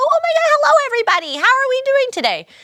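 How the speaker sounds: very high, rushed, nervous chatter. Showing how they talk when nervous, in a high nervous voice. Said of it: "when I'm nervous, I tend to talk up here".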